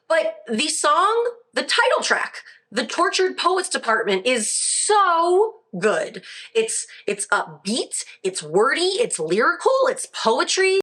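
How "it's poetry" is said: voice cracking up high on the word. Reviewing an album's title track, voice cracking. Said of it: "I don't know why my voice just cracked".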